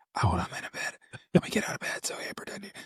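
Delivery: mock whispering. Retelling a phone call where the friend answered from bed: imitating a friend whispering. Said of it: "Why am I whispering?".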